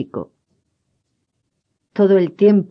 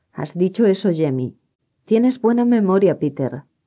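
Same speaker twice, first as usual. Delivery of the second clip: plain reading voice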